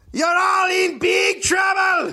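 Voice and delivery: very high-pitched, shrill, furious scream. Retelling what a man screamed while shaking his fist, retelling a scream. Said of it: "He shook his fist and screamed".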